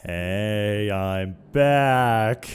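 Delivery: eerie, unsettling delivery with a drawn-out hey. Returning, the speaker announces being back; creepy greeting. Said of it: "say it like that. It was a little bit creepy".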